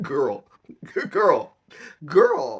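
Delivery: put-on loud, high-pitched girl voice, laughing in disbelief.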